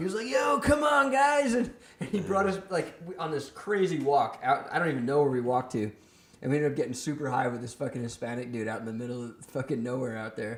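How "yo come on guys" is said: put-on very high, very slow, drawn-out drunk surfer-bro drawl. Retelling meeting a stranger who was super drunk, imitating a drunk surfer bro. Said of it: "He talked like this".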